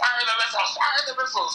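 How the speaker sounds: acted-out, very high-pitched shouting. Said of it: "shouted the launch codes at one point".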